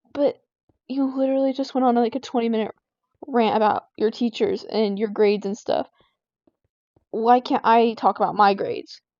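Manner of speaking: ordinary talk, nothing marked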